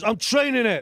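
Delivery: gruff male voice, high and loud.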